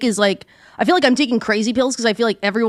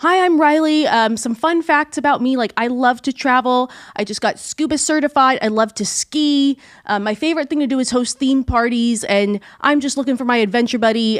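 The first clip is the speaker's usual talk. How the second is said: play-acted gushing, thrilled, very excited, eager delivery. Retelling how a girl introduced herself on a show: imitating Riley, very excited. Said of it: "she's, like, so excited".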